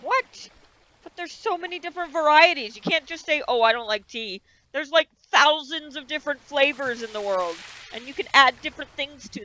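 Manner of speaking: heated, worked-up, agitated, overinvested rant. Character reacting to someone who says they can't stand tea, worked up. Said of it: "I'm getting way too worked up about tea".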